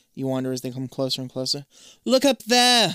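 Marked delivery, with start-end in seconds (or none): 2.1-3.0 loud, high-pitched shout. Reading a story aloud where Zoe points at the pyramid: yelling. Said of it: "Zoe yells".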